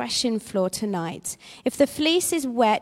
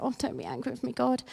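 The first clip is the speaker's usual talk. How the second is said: small, tiny, very hushed, creaky questioning voice; 10 dB quieter than usual. Acting out Gideon talking to God, in Gideon's little voice. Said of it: "you can just hear his little voice".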